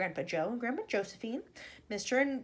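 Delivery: plain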